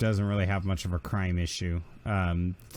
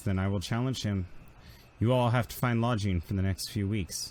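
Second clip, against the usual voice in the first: ordinary talk, nothing marked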